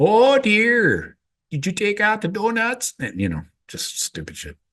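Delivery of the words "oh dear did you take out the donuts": put-on semi-Canadian Midwest accent, very high and slow. Teasing his wife, mimicking the locals: put-on semi-Canadian accent. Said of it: "I do an imitation. ... that semi-Canadian accent".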